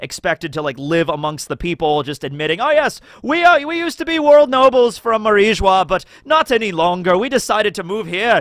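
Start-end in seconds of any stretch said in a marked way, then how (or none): 2.6-8.4 horrible, terrible put-on Scottish accent. Voicing a former world noble admitting his past, the speaker does Donquixote Homing, horrible Scottish accent. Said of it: "That's a horrible Scottish accent".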